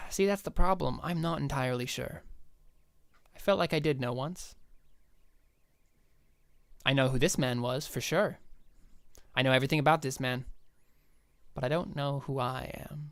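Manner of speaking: sorrowful with a sigh. Voicing a man asked who he is in the game, sad and sighing. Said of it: "he kind of seems sad and he kind of sighs".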